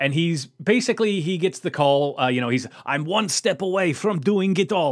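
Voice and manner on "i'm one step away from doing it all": put-on awful German accent, pitched up. Recapping the origin story, voicing the character in his lab, in awful German accent. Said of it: "This is my awful, awful German accent".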